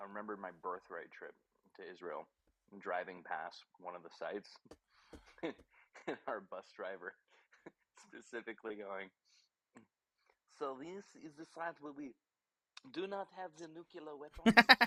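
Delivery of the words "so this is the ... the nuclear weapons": very loud, high, put-on French accent. Recalling a bus driver on a birthright trip to Israel, the speaker quotes him in a French accent. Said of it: "I don't know why I did a French accent".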